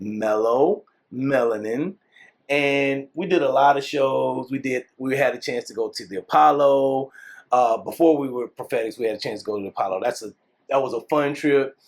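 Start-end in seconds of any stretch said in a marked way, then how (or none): 0.0-2.0 slow, deliberate, carefully spaced word by word. Speaker repeats their stage name for people who don't know it, said slowly. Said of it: "I'm gonna say that slow".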